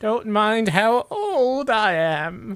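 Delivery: put-on high-pitched elderly woman's voice. Inviting visitors looking for a replacement inside, old lady voice. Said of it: "I'm just imitating an old lady voice".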